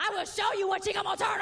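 high, loud, defiant shout.

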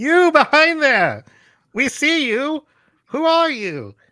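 very high, slow, drawn-out, challenging yell. Playing a character who calls out to someone hiding behind the epiglottis: yelling in character. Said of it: "yell behind the epiglottis and go".

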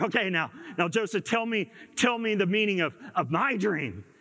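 ordinary delivery

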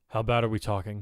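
plain

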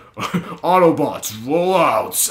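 attempted deep voice that falls short. Signing off to your subscribers, try a line as Optimus Prime in a failed Optimus Prime impression. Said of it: "I couldn't even do him".

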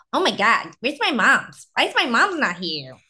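high-pitched, swooping, doting pet-talk voice. Showing the voice they use when talking for Georgia, in Georgia's voice. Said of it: "So Georgia's voice is".

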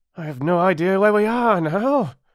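high, breathless, calling out. Reading a story, Eddie calls out from the small plane, breathless. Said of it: "called Eddie breathlessly".

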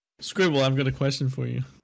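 normal talking voice

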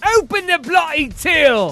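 put-on mimicked English accent. Retelling what a man shouted, imitating an english accent. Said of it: "Like with an English accent".

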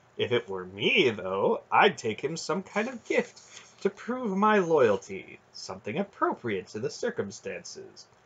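plain

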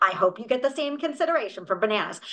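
ordinary delivery

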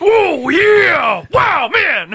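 very loud, high-pitched, drawn-out yell. Joking about a friend drinking slushies: Macho Man Randy Savage voice. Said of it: "doing lines like Macho Man Randy Savage".

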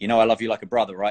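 mock-deadpan delivery. Retelling what a man said to Karl after walking over, deadpan. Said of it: "a deadpan".

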